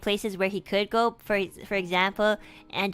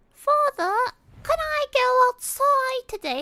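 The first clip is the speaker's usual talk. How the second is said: very high-pitched squeaky voice; 3 dB louder than usual. Attempting Peppa Pig without ever having watched the show: Peppa Pig voice. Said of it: "oh my god, my voice".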